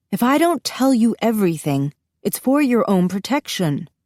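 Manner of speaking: fed-up, exasperated voice, patience worn thin. Reading a mother calling after her daughter: exasperated voice. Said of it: "she calls after me in an exasperated voice".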